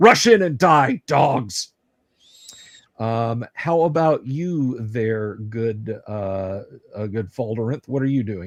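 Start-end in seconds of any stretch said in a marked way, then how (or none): 0.0-1.7 loud charging battle-cry yell. Voicing a sword-drawing character charging gnolls: character yelling. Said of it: "she's yelling".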